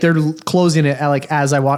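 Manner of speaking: normal talking voice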